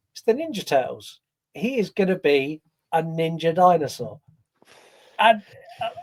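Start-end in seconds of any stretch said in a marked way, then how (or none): none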